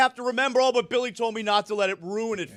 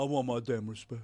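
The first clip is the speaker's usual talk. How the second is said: deliberately bad, sloppy put-on basketball-star voice; 12 semitones lower, 8 dB quieter than usual. Imitating a player after his fourth title: bad LeBron James impression. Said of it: "Wins a championship".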